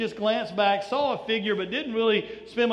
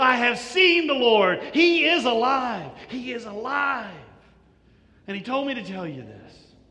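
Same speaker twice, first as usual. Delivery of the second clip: mock overjoyed, thrilled, swooping delivery; 3 dB louder than usual. Speaker acting out Mary Magdalene after seeing the risen Lord, put-on excitement. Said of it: "She is so excited at this point".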